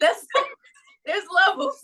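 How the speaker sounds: high, loud laugh through the words.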